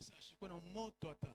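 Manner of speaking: soft low voice. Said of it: "si je parle à voix basse".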